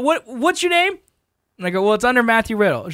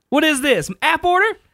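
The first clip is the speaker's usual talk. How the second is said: high, sassy, put-on voice full of attitude; 5 semitones higher than usual. Retelling a lady coming over to the cashier: imitating a lady getting sassy. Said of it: "starts getting real sassy with the cashier".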